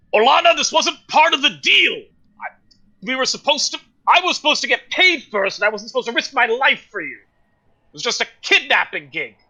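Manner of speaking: loud, high calling-out voice. Voicing a character who backs away, protesting a deal: shouting in character. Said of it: "you hear him shout".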